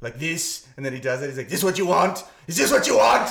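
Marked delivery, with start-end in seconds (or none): 1.5-3.3 loud, high-pitched ranting freak-out, losing control. Retelling an actor on set shouting at the crew: imitating an actor's freak-out. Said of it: "had, like, a freak out".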